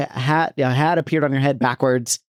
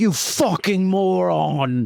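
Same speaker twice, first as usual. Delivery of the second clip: harsh berating TV chef voice with the word moron stretched; 5 semitones higher than usual. Describing the US version of the show: yelling Gordon Ramsay impression. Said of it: "To the U S version where he's like".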